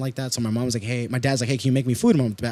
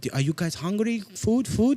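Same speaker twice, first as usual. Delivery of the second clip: mimicked broken English, much higher, slower; 8 semitones higher, 3 dB quieter than usual. Speaker retelling how their mom offered food to school friends: imitating mom's broken English. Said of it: "Like in a broken English".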